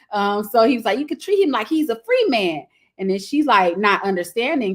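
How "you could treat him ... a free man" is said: high, put-on backwoods rural country accent. Retelling a movie scene, imitating a character's country accent. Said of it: "my rendition of his accent".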